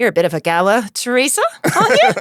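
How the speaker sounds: clumsy, bad Australian accent, swooping. Retelling what two guys on the tour said: attempted Australian accent. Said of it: "I can't do an Australian accent".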